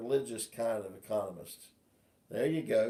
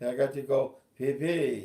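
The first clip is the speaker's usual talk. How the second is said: very slow, drawn-out, put-on French accent; 3 semitones higher, 4 dB louder than usual. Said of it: "With a French accent".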